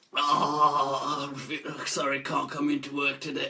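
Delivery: put-on croaky, fake sick-sounding voice. Showing how to fake being ill to skip work: fake croaky sick voice. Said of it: "So you get that croaky voice".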